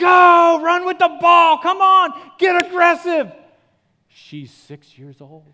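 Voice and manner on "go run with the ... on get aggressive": very high-pitched, shrill, full-volume screaming. Speaker acts out parents at six-year-old soccer games, imitating screaming parents. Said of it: "they're screaming".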